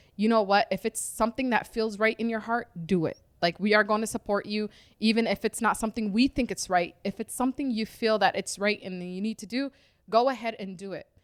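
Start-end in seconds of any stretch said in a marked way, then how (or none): none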